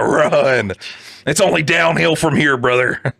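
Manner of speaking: shouting. Yelling a warning at the guy in the story: yelling. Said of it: "I'm yelling this at this guy".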